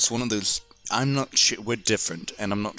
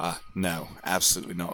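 quiet, very serious, grave tone. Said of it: "goes very seriously".

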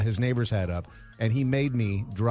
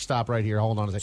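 plain

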